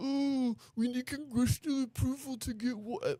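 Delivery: derisive, mocking put-on voice, very high pitch. The speaker recounts a man who got mad at him, in a mocking voice. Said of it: "he started doing a mocking voice".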